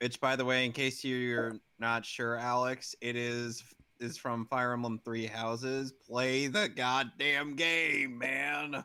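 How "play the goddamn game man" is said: needlessly hostile, aggressive, slow delivery. Urging another speaker to play a game: needlessly aggressive. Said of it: "I sound so needlessly aggressive".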